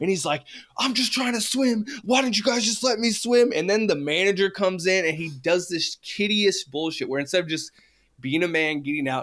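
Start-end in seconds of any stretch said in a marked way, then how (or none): 0.8-3.5 high-pitched, shouted, screaming protest. Retelling a fight at a pool, acting out a swimmer, imitating someone screaming. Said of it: "was screaming".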